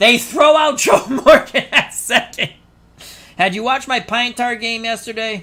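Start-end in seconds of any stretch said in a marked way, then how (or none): 0.0-2.5 high, loud laughing call. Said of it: "You know why I'm laughing".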